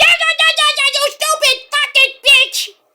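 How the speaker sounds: very high, raging, furious yell. Recapping a match, speaker acts out Mina yelling at him. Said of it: "she's like yelling at him".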